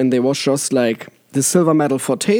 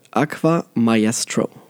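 slowed-down, slowly repeated words; 3 semitones lower than usual. Asked to say the name slower, the speaker repeats it, said slower. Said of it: "can you say that slower?".

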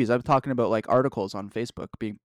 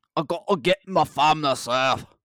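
put-on Scottish accent, pitched much higher; 4 semitones higher, 3 dB louder than usual. Redoing a quoted line after a worse first try, Gerard impression with Scottish accent. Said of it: "That was better".

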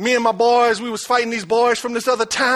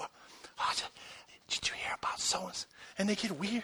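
secretive, hushed whisper, barely voiced; 3 semitones lower, 19 dB quieter than usual. Imitating a professional gossip about to share something juicy: imitating a gossip whispering. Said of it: "what you whispering for?".

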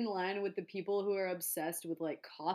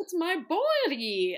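put-on loud, high, showy theater-kid stage voice; 9 semitones higher, 7 dB louder than usual. Mocking how theater kids talk to be funny: imitating a theater kid stage voice. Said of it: "voice that theater kids and, like, YouTube people use".

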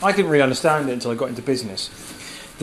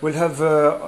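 put-on, halting Central European accent; 2 semitones higher than usual. Speaker recalls grandpa ordering at a burger joint, doing his Central European accent. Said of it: "with his Central European accent".

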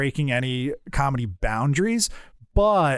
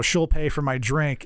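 plain

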